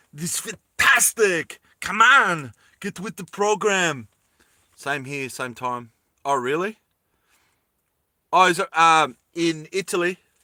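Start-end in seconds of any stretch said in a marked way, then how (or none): 0.2-4.1 movie cyborg, action-hero AI character voice. Showing how you would talk if you were an AI, as an Arnold Schwarzenegger impression. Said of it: "I would talk like this. If I was A I, I I would be Arnold Schwarzenegger".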